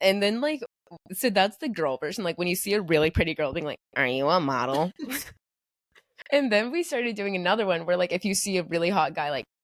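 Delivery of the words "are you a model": dry, low, flat deadpan delivery. Showing the line said on seeing a really pretty girl, in deadpan. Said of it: "we'll do this in this like really like deadpan voice".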